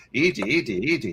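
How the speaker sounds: put-on alien creature voice. Answering a request to talk in the E.T. voice: put-on E.T. voice. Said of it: "talk in your E T voice".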